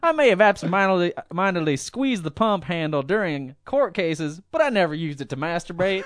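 high-pitched put-on voice, pleading.

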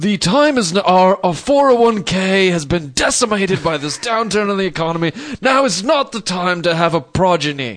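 high-pitched character voice, declaiming like grand speech. Making arguments to convince her not to have the kid, in a Thurston Howell voice. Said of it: "That's my Thurston Howell voice".

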